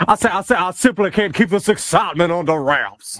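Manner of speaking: blustery Southern cartoon rooster voice. Speaker describes what happens when he raises his voice: Foghorn Leghorn voice. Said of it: "That I turn into foghorn Leghorn".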